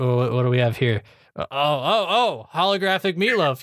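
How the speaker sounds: understated cartoon villain voice. Showing how a cartoon character delivers a line: understated Plankton delivery. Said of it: "an understated".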